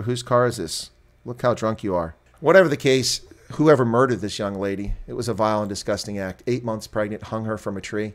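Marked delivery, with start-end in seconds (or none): none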